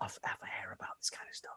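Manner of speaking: soft, unvoiced whisper.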